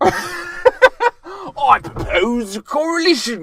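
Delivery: loud, very high, thicker put-on Cockney accent. Showing the other speaker how the line should sound, in a cockney accent. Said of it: "you're not doing it Cockney".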